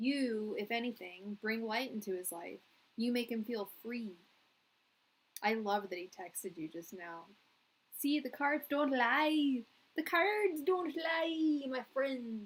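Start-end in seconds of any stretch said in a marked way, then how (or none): 8.0-12.4 put-on pirate accent, loud and pitched up. Reading tarot cards for a listener, in a pirate accent. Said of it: "That's my pirate accent".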